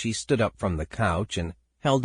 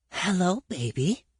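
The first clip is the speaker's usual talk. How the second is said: airy, breath-filled voice, slightly high pitch; 9 semitones higher than usual. Reading aloud a character leaning against a door frame: breathy voice. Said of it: "he said in a breathy voice".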